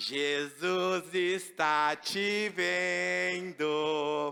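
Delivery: strange low parrot voice, very slow, "vendo" drawn out. Telling a joke, the parrot speaks to a man; strange parrot voice. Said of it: "Com aquela voz estranha dele".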